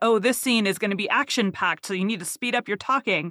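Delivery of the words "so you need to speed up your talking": ordinary talk, nothing marked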